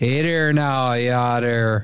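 accent from the Upper Midwest. Friends discussing regional American accents: Upper Midwest accent. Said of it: "if you're from the Uper".

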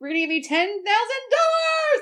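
very high-pitched announcer voice. Retelling a boss announcing a cash gift: Oprah voice. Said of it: "an Oprah voice".

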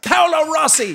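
very high-pitched shout. Retelling a man shouting up a ladder at another man, imitating someone shouting. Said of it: "He's shouting at this guy".

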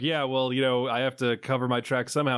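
ordinary delivery

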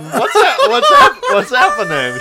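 very high, very loud, shrill, shocked stammering squeal. Retelling a show contestant's proposal reaction: imitating someone happy but in shock. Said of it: "she's happy, but she's, like, in shock".

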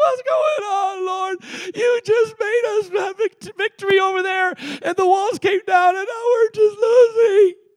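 put-on sobbing and wailing, high and tearful. Acting out Joshua's complaint to the Lord: mock crying as Joshua. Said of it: "he's crying".

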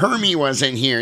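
put-on gruff voice. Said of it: "his voice is back again".

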